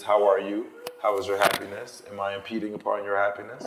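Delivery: normal talking voice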